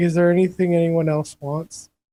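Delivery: soft, quiet muttering tone. Player voicing their quiet character asking the group, in a soft muttering tone. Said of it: "mutter out in like a really kind of soft tone".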